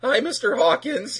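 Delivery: voice cracking into a very high squeak. Retelling a show scene where Virgil greets Mr. Hawkins, Virgil's squeaking voice crack. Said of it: "his voice just squeaks".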